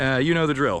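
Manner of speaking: ordinary talk, nothing marked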